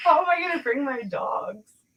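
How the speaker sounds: high-pitched, sarcastic tone. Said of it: "That was sarcasm".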